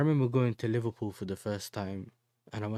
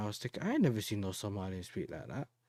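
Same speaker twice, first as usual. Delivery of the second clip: plain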